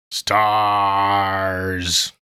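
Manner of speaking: stars dragged out, bad put-on voice. Answering a question about pre-ordering with a Nemesis impression. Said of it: "That was my Nemesis impression".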